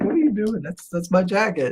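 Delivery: play-acted speaking while laughing through the words. Retelling confronting a woman who took the jacket, retelling laughing while talking. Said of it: "And I'm laughing".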